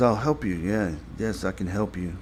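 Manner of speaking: ordinary talk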